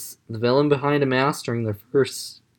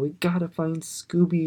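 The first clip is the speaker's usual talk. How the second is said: put-on sweet, cutesy, childish baby talk; 4 semitones higher, 5 dB quieter than usual. Retelling a scene from the episode: Shuggy baby talk. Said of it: "in her baby talk".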